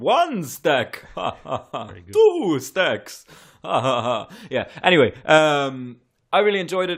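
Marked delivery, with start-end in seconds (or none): 0.0-4.3 slow cartoon voice, swooping and dragging each count. Comparing a stereotypical character to the Count from Sesame Street, doing his voice. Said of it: "goes more towards the Count from Sesame Street".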